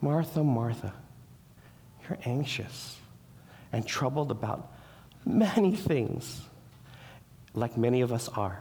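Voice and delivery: most gentle, humble, tender delivery. Reading out a quoted scripture line to show its tone: gentle. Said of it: "He does it in this most gentle, most humble way. ... can you feel it in his voice?".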